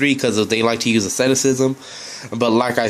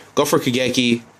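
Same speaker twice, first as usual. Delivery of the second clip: ordinary talk, nothing marked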